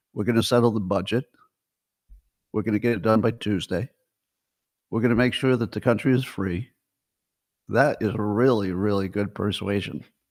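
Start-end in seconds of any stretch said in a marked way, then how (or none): 0.2-6.7 pitch falling low at the end on budget, Tuesday, free. Showing how Mike Johnson sounds persuasive, with falling sentence endings. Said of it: "He always ends lower than he starts".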